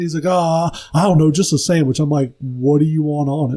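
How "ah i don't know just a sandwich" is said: put-on stoned, high-sounding voice. Speaker retelling a high customer asking for just a sandwich, imitating him. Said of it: "just like fucking high on something".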